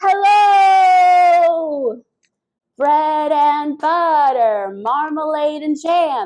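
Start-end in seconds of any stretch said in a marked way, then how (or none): 0.0-2.0 all-out loud, high, drawn-out, stretched delivery. Leading a group in a hello game, say hello as loud as possible. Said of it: "Let's say hello as loud as we can".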